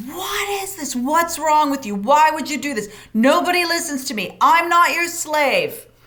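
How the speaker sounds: furious, high-pitched, angry shouted rant. Showing how people overreact on walking into a messy room: acting out angry yelling. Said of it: "we just start yelling".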